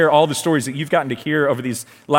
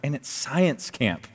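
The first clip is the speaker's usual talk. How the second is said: slow, half-swallowed grumbling mutter under the breath; 9 dB quieter than usual. Retelling a family dinner conversation at the table, muttered under breath. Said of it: "I'm kind of saying it under my breath".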